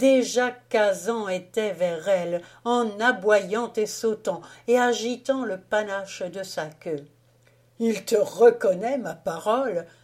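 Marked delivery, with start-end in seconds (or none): 7.8-9.8 laughing while speaking. A husband speaks to his wife as the dog greets her, laughing while speaking. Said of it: "dit en riant le mari".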